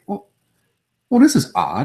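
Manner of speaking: most proper, primly polite, sing-song voice. Recounting an intimate encounter, the speaker quotes own reaction: retelling in a proper tone. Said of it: "you said that in the most proper".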